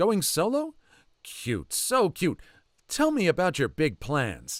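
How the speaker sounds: mock overeager gushing. Retelling a waiter's greeting to a group of preteens: imitating an excited waiter. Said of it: "He's foaming with excitement".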